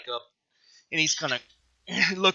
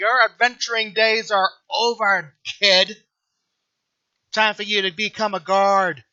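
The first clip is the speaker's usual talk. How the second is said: derisive, mocking, taunting ribbing tone; 4 semitones higher, 4 dB louder than usual. A game master's enemy mocks Justin, who is favoring his knee: mocking. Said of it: "and just mocking at him".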